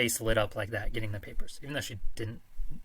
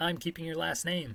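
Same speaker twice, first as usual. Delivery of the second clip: nice, sweet, high, feminine voice; 7 semitones higher than usual. Retelling what the wife said about the divorce papers: imitating a nice sweet feminine voice. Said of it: "in a really nice, sweet, feminine voice".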